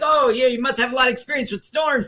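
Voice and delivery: self-assured, cocky confidence. Retelling what a man says on the audio, imitating him all cocky and confident. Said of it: "he's like all cocky and confident".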